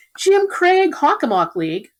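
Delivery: loud, high-pitched yelling. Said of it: "So I'm yelling".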